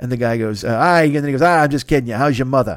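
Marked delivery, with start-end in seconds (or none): 1.4-2.8 bad, unconvincing Boston accent. Retelling a favorite movie scene, the speaker does a bad Jack Nicholson Boston accent. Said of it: "does a bad Boston accent".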